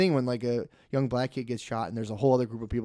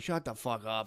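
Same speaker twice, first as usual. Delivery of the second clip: put-on obnoxious drunken rudeness, quieter; 7 dB quieter than usual. Retelling what they said at the blackjack table: imitating own obnoxious drunk self. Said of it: "when I'm really drunk, so I'm, like, all obnoxious".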